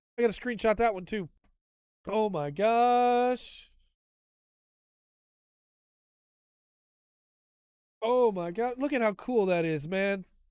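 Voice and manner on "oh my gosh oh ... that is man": overexcited gushing delight, "gosh" drawn out. Reading out new game update content, very excited. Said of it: "I'm getting too excited".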